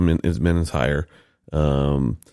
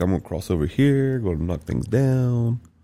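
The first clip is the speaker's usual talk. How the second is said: needy dog voice, pitched up; 7 semitones higher, 3 dB quieter than usual. Speaking as the dog who is crossing the room: voicing the dog Bentley. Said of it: "Bentley's like".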